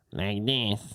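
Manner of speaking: put-on American accent. Showing what an American accent sounds like: nasal American accent. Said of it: "What's an American accent?".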